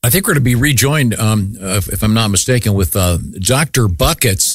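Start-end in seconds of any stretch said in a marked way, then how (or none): 2.7-4.6 slow, drawn-out words with falling pitch. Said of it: "That's what you sound like".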